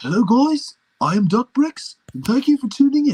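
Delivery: very high, loud put-on British accent. Attempting Duck in a British accent, opening a video: British Duck voice. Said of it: "British duck".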